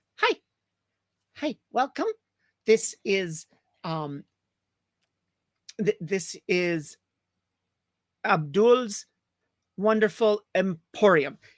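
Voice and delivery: put-on tiny small-child voice, halting and stumbling. Voicing a very tiny kid greeting customers at a tailor shop: voicing a tiny little kid. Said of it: "a very tiny little kid goes".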